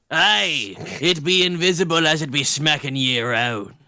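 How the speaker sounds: put-on low, rough pirate accent. Speaker voicing a character during group roleplay: pirate voice. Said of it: "Why did it suddenly go pirate?".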